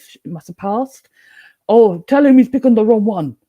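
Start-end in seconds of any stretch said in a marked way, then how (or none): 1.7-3.3 mock Jamaican accent, higher and louder. Retelling what a spirit said while shopping: Jamaican accent. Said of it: "the Jamaican accent of his wife".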